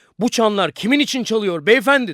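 very high, loud, greatly excited cry. A man comes in and addresses the businessman, with great excitement. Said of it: "Büyük bir heyecanla".

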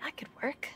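soft, hushed whisper.

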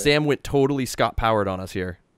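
ordinary talk

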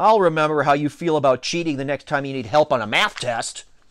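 ordinary delivery

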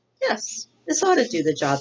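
as friendly as can be, sing-song. Roz answers Mr. Beaver, in her friendliest voice. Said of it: "in her friendliest voice".

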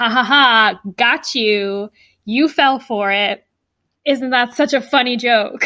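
ordinary talk, nothing marked

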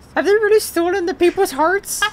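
put-on very high posh cartoon lady voice. Reading dialogue aloud while others listen, the speaker voices a line in a put-on woman voice. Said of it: "You sound like the Stewie doing the woman voice".

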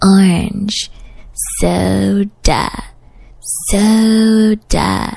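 "orange soda" stretched out, long pauses between words.

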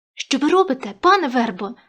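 exclaiming with a gasp. Narrator reads the boy reacting as the old man kicks Khoma: gasping. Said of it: "охнув хлопець".

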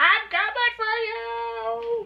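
very high, very slow sissified drawl, "for" drawn out. Playing a game, imitating the ghast coming for the player: imitating a ghast's sissified voice. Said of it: "That's what he talks like. He talks all sissified".

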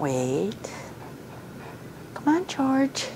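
gentle, sugary, soft, high sweet voice. Showing a listener how their command to the dog sounds, imitating a very sweet voice. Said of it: "you have a very sweet voice".

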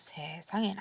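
hushed, whispered, shocked and stunned gasp.

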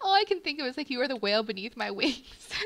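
loud, laughing through the words. Showing decor items, the speaker jokes about a whale rack, laughing while speaking. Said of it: "I can't stop laughing now".

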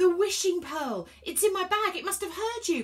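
sudden outcry. Reading a companion on the runaway train, crying out. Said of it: "cried Elliot".

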